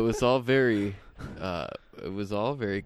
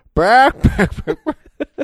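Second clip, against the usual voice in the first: shrill, very loud burring, high pitch; 13 dB louder than usual. Showing off impressions to another speaker, doing a Berman impression. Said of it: "I also do a mean Berman".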